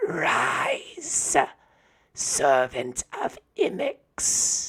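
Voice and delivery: cracked, rasping, broken high cry. Narrator voices a woman of the cult of eternal flame crying out, in a broken, raspy, cracked voice. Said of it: "in this broken, raspy, cracked voice, she cries out".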